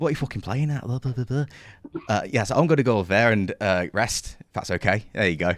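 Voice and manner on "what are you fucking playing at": put-on northern English accent, pitched up. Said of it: "that northern accent".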